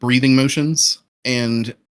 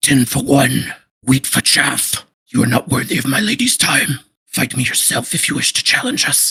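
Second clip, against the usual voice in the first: rough, scraped-throat, raspiest possible voice. Voicing a character who steps forward to issue a challenge, raspiest voice. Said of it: "and in his raspiest voice".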